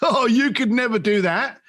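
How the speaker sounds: scoffing dismissal. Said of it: "laugh and scoff at you and go".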